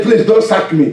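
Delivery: ordinary talk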